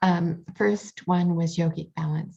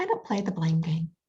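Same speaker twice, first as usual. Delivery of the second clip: easy, light, gentle delivery. Retelling a reply to a man's repeated right-and-wrong remarks: very soft and light. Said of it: "very softly said, and lightly".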